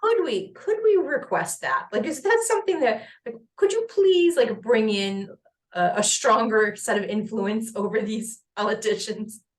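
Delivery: lilting, pleading tone.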